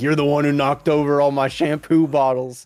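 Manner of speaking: high, shrill, loud screaming yell. Retelling a sister's comment on a video: imitating sister screaming. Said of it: "it's just her screaming, like".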